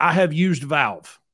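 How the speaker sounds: put-on loud, thick, heavy Eastern European accent. Retelling what a man quoting a $500 repair said, in a thick eastern european accent. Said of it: "really thick Eastern European accent".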